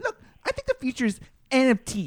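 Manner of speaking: loud, squeaky voice with big pitch swoops. Showing how people on TikTok impersonate Gary Vee: imitating Gary Vee's squeaky voice. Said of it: "he has a really squeaky voice, so everybody impersonates that".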